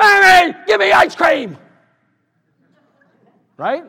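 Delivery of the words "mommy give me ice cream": put-on very high, very loud, shrill, demanding child yelling. Acting out an undisciplined child who keeps asking: imitating a demanding child. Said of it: "it'll be like your child".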